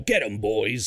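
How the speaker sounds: mock low gruff Cockney voice. Retelling how a character is voiced in a game series, acting out his line for a listener, imitating a low gruff Cockney voice. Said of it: "he chose to do a New York kind of like".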